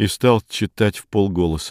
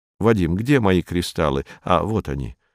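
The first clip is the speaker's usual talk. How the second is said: plain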